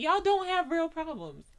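put-on, very high, loud laughing scoff throughout. Retelling how his mom reacted while watching them argue, imitating someone laughing. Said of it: "she was just laughing".

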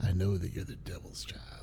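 ominous, unvoiced, hushed whisper.

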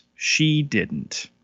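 TV narrator voiceover voice. Recapping a TV episode, the speaker adds a correction in Arrested Development narrator voice. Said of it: "Arrested Development narrator voice".

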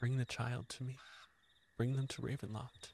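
very soft half-whisper. Voicing a presence speaking in a player's mind: half-whispering in the mind. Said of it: "As Guilty whispers in your ear".

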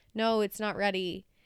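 put-on flat monotone. Retelling a man answering a girl who grabbed his gum; mock monotone. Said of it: "so monotone".

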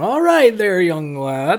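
put-on slow, sing-song eighty-year-old grandpa voice. Quoting a character's reply in a put-on eighty-year-old grandpa voice. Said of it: "He doesn't sound like this eighty-year-old grand".

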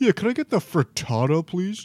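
dopey dim-witted voice. Imitating a friend ordering food: dumb Kyle voice. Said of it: "That was a pretty good dumb Kyle voice".

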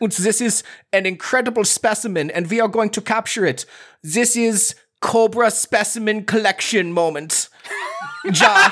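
put-on hammed-up poor German accent. A performer presents his scientist character's specimen, bad Professor Helix German accent. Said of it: "He's not great at doing a German null accent".

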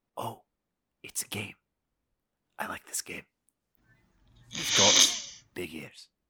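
breathy, hushed whispered aside. Voicing Casper, who is told to keep quiet: whispering as Casper. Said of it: "Casper whispers".

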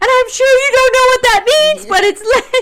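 put-on sobbing, very high-pitched and very loud. Retelling talking to a woman after tripping up the stairs, acting out crying while talking. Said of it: "And I'm crying and I'm just like".

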